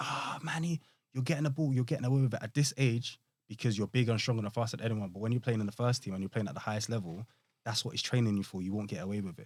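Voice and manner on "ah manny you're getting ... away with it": pitched-up, screaming, scolding voice. Retelling being screamed at for turning the wrong way: imitating someone screaming. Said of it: "he's screaming at me".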